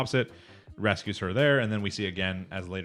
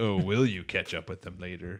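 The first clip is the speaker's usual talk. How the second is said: sinister, ominous, foreboding, doom-laden tone. Recapping a scene, the speaker imitates the ominous voice guy: imitating an ominous voice. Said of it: "ominous voice guy coming in like".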